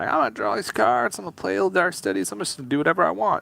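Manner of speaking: high character voice with a creaky rasp. Describing a player's carefree turn, doing an impression of Maverick. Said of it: "I didn't know that's how Maverick sounded".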